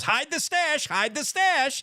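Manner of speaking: very high, chattering parrot voice. Describing a telltale parrot as cops knock at the door, parrot voice. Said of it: "parrot goes".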